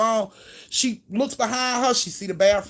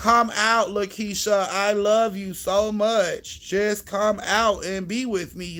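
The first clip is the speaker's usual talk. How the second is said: put-on, very slow, flat, emotionless robotic drone. Mocking a woman calling out for her boo, imitating a flat, emotionless voice. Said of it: "Shit sound like a robot. ... it was no type of emotion in her voice".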